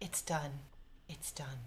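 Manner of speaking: very quiet, hushed whisper, as if to oneself. A game character watches him get kicked off the tower: whispering to himself. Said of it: "And I whisper to myself".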